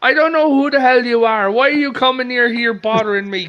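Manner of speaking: put-on strong Irish accent. Retelling what a woman's grandfather said to her; thick Irish accent. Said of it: "her grandfather it has a thick Irish accent".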